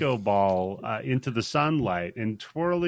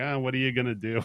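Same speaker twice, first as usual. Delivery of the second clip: mock indifferent, careless tone. Retelling a movie scene where a character sees a missing head: imitating a careless shrug. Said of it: "he does not give a".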